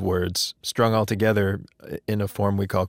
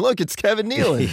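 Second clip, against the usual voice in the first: very high, shrill, loud calling-out voice; 12 semitones higher than usual. Acting out strangers telling everyone they spotted someone: imitating someone talking loudly. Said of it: "they loudly start telling everyone".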